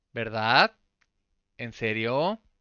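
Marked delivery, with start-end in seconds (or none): 0.1-0.7 verdad lifting upward at the end. Explaining the Spanish tag question: rising pitch on verdad. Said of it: "ese tono de pregunta de que va para arriba".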